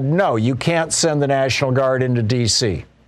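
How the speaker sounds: ordinary talk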